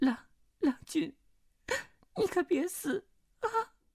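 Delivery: trembling voice. Narrator reads a young woman's plea to the young man she holds, trembling voice. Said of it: "颤声道".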